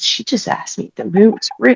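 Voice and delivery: quiet, hushed, gossiping stage whisper. Retelling what a woman said to the man next to her: imitating someone whispering. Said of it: "then she started whispering to the guy next".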